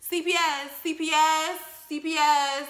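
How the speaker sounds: mock shouting, loud.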